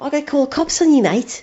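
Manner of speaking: put-on Scouse accent. Retelling a man who took them for burglars, in a scouse accent. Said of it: "in a clearly a Scouse accent there".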